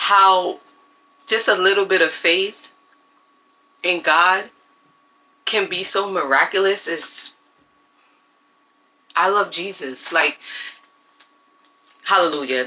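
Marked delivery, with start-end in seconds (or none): 4.0-12.6 choked up, emotional, close to tears. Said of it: "I'm really getting emotional right now".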